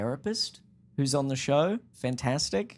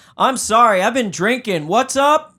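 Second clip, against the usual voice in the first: screaming, very high and very loud; 9 semitones higher, 13 dB louder than usual. Retelling a phone call where the other person was screaming over music: imitating someone screaming over music. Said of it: "you were screaming over music".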